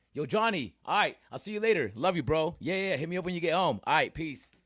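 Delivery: breezy nonchalant voice. Showing how to say love you to your boys: nonchalant. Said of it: "let me do it again".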